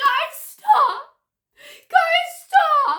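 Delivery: grating, raspy, shrill, very high, very loud, drawn out. Retelling what a girl in a pink hoodie said, imitating a raspy voice. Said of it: "Like her voice was really raspy".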